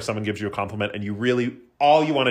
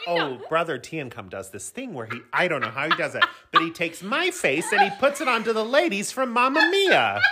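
mocking put-on old lady voice, much higher pitch; 8 semitones higher than usual. Repeating the other speaker's words back to them in a mocking old-lady voice. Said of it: "You sounded like such an old lady".

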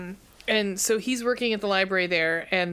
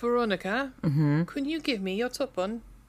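fake British accent, higher pitch; 4 semitones higher than usual. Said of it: "I'm British tonight".

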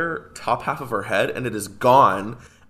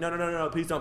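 mock pleading, quieter and slower; 5 semitones higher, 7 dB quieter than usual. Recounting a scene where men go to kill her, imitate someone begging.

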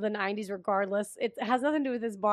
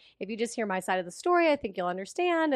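ordinary delivery

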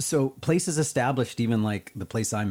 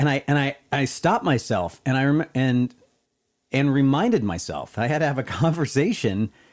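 ordinary talk

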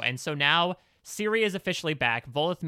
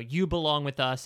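ordinary talk

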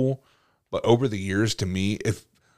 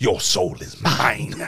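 put-on villain voice. Acting out the villain from the movie pointing at someone: imitating the movie villain. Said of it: "that dude from the movie points at you".

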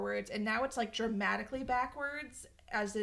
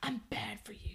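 mock overly dramatic delivery, quieter; 5 dB quieter than usual. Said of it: "It's the most dramatic shit".

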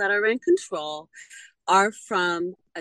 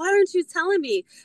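acted, shrill, very high demanding yell; 10 semitones higher than usual. Retelling a friend yelling at the gambling table: imitating a friend yelling. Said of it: "my friend yelled at me".

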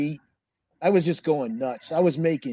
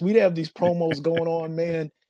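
ordinary delivery

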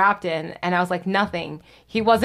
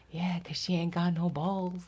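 very quiet, hushed, slipped out under the breath; 2 semitones lower, 10 dB quieter than usual. Retelling a comment someone made during a conversation, retelling a real quiet remark. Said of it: "She goes real quietly".

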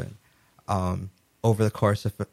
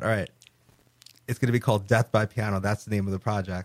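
usual speaking voice

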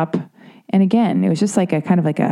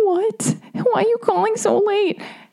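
put-on very high, small voice of a four-year-old girl. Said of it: "Sounds like four years old".

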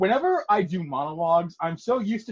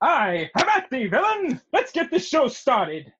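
put-on cartoon ninja voice; 7 semitones higher than usual. Hosts jump into the title sequence doing their best voice impressions, as the Great Ninja. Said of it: "doing our best voice impressions of".

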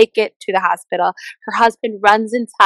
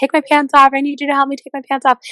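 put-on panicked, urgent screaming cry; 6 semitones higher than usual. Retell how a woman giving birth in a car begged for help, imitating screaming bloody murder. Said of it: "she's screaming bloody murder".

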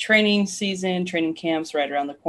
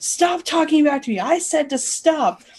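mock scolding yell, pitched high; 10 semitones higher, 4 dB louder than usual. Retelling scolding a barking dog: retelling yelling at a dog. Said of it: "just yelling at our dogs".

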